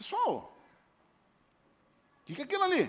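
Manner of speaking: very high, swooping, feigned-innocent, clueless puzzlement. Retelling the text as God speaking while pretending not to know: playing dumb, feigning ignorance. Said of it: "Deus se fez assim de desinformado".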